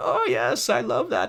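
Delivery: put-on very slow, soft old-granny voice. Retelling an older woman talking during movie previews, in a granny voice. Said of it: "a granny voice being like".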